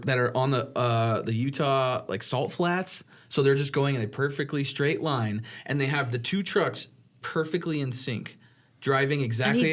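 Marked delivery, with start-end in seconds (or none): none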